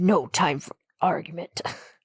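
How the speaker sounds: sinister, put-on evil villain voice. Retelling a character's line from a film to the other speaker, in a put-on evil voice. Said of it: "I love your evil voice".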